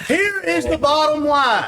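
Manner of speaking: slow, deliberate, word-by-word delivery. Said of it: "I'm gonna say it slow".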